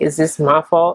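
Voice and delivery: plain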